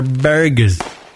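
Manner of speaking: burgers said with a drawn-out East Coast r. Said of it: "You gotta say it like the East Coast people".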